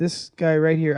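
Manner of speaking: plain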